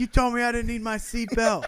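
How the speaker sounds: play-acted, very high-pitched, frantic, alarmed yelling. Recalling a ride with the listener, speaker replays yelling at them: retelling a yell at the listener. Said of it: "I'm just yelling at you like".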